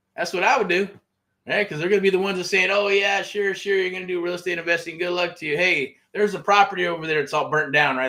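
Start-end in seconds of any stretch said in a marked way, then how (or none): 2.7-8.0 put-on sarcastic, mocking tone. Imitating friends and family doubting the investing plans: imitating sarcastic friends. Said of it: "They're being sarcastic".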